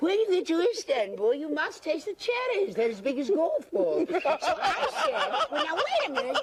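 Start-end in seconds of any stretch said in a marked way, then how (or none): 0.0-4.1 put-on thick upper-class English aristocrat accent, quick. Retelling a titled lady's explanation of what was said: thick English aristocrat accent. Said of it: "mimicked an English aristocrat's thick accent".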